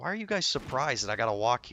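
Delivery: mock mad, loud, indignant griping. Retelling a complaint to the dungeon group that kicked you out: retelling angry complaint. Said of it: "I was so mad".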